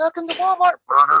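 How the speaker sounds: put-on very high, shrill, loud little-old-lady voice. Imagining a little old lady greeter at Walmart: little old lady voice. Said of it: "some little old lady going".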